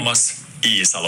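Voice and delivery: low-pitched native Finnish pronunciation of a name.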